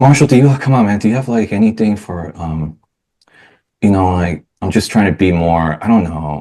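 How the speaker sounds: plaintive, whiny, halting complaining tone. Role-playing the tone his wife likes least: whiny tone. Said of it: "this is my wife's least liked tone for me".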